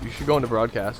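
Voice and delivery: ordinary talk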